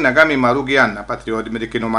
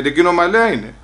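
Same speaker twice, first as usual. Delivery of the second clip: ordinary talk, nothing marked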